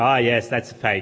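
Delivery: smug, self-satisfied, low, dismissive tone. Imagining how a listener would answer him, mock-smug dismissal. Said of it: "you might do it quite smugly".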